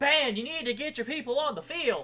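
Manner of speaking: shrill, very high, loud, rude announcer-style yell. Recounting how a rude announcer addressed the band, imitating a yelling announcer. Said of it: "basically yelling at us".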